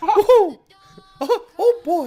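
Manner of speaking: very high little cartoon squeak. Chatting about Disney cruises, breaking into a Mickey Mouse voice. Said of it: "The Mickey Mouse voice".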